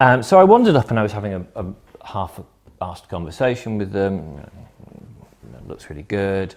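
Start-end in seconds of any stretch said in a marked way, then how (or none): 5.7-6.5 mock patronising tone, lower and quieter. Retelling what was said to a group: imitating own patronising tone.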